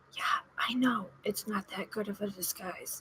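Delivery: very quiet, hushed, secretive whisper. A disguised character leans over to another character and answers, whispered. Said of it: "And I lean over and I whisper".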